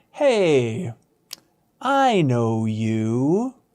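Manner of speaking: mock, very slow, strangely loaded, swooping, baffling tone. Retelling a guy at a farmer's market coming up: imitating a confusing tone. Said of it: "it was the most confusing tone".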